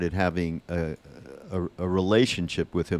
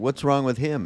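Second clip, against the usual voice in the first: high, mock delivery through laughter; 7 semitones higher than usual. Recalling a man laughing while the group sat around: retelling a laughing question. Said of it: "Maharaj would be laughing".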